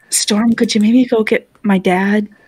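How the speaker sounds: muttered quietly under the breath. Asking another character in the game to fetch a dad: said under the breath. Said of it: "say under my breath".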